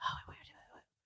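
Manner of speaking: whispery, little creature voice. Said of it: "I can't do their whispering voice".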